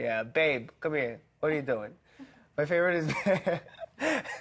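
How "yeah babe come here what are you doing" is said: Brooklyn-Italian man's way of talking. Imitating a man described as brooklyn italian: brooklyn italian accent. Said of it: "he's like Brooklyn Italian".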